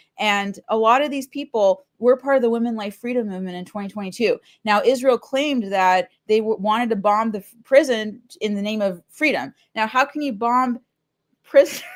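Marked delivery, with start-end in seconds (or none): 9.9-11.8 talking through laughter, higher pitch. Questioning a claim about bombing a prison, laughing while talking. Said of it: "I'm sorry, I'm laughing".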